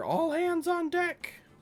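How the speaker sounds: shrill, high, stretched-out yell. Describing what the sleeping characters wake up to hear: yelling. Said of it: "what are you yelling?".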